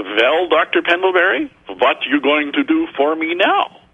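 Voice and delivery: put-on Swiss German accent on English. Retelling what Roger said as they left the office, in Roger's Swiss German accent. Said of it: "he said in his Swiss German accent".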